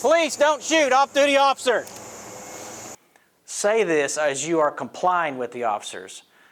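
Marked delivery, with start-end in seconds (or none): 0.0-1.8 loud, very high, raised-voice call-out shout. Demonstrating what an off-duty officer calls out to on-duty police, in a loud voice. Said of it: "In a loud voice".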